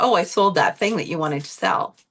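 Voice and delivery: ordinary talk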